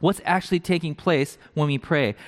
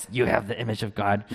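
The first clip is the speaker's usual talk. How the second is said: deep, rasping put-on voice; 7 semitones lower than usual. Speaker demonstrates how a phrase might be said in a sermon, in a deeper, raspier voice. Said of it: "a deeper, raspier voice".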